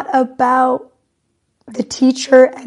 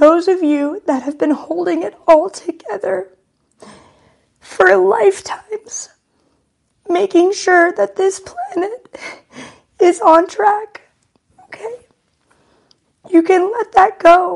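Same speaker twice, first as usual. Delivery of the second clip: high-pitched ugly crying. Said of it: "I got ugly crying".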